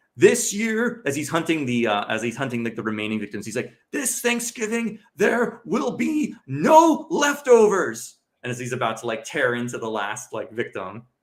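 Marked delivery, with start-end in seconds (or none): 3.9-8.2 over-the-top, very high, drawn-out delivery. Retelling the movie killer's last line: over-the-top Patrick Dempsey killer line. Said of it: "in the most over-the-top, hilarious fashion".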